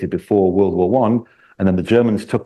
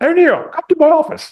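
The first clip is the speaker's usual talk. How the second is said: badly done, very high-pitched voice; 3 dB louder than usual. Storyteller voicing Patton calling Chaplain O'Neill to his office, bad high-pitched Patton voice. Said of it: "It's a very bad high-pitched voice".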